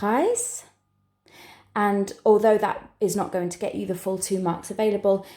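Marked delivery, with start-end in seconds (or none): 0.0-0.6 Preis said with a rising question tune. Exam tip for struggling with a question: rising question intonation on Preis. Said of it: "just say this word with a question intonation".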